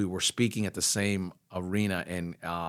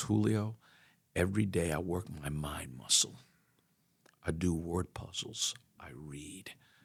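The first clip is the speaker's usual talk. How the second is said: gentle, soft, sweet, tender voice; 5 dB quieter than usual. Speaker recalls the coach answering his question, imitating a sweet, tender voice. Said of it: "with a real sweet, tender voice".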